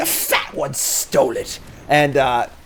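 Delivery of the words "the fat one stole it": put-on creature voice, slow and drawn-out. Doing a voice around the house for the baby: Sméagol voice. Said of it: "I do a pretty good Schmeagle".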